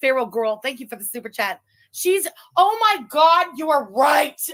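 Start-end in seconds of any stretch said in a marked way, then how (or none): 1.9-4.4 sudden high, loud, drawn-out shouted outburst. Responding to a viewer's super chat: yelling. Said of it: "I'm sorry for yelling".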